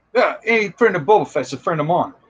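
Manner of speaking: terrible put-on New Zealand accent. Retelling what a man said when signing his helmet, in a terrible New Zealand accent. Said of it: "that was my terrible New Zealand accent".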